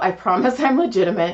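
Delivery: ordinary delivery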